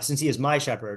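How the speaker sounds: hard stress landing on 'my'. Discussing how to read a line about a shepherd, stress on my. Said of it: "I'm kind of putting the emphasis on the my".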